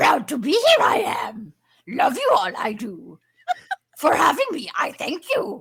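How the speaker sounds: very loud, booming sage voice with swooping pitch. Asked by the host to pick a voice, a guest signs off, Yoda voice.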